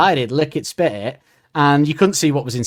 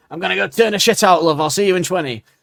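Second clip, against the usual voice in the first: Northern English bloke's accent, pitched up; 5 semitones higher than usual. Showing how a man might answer her, in a Northern English man accent. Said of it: "in a sort of Northern English man way".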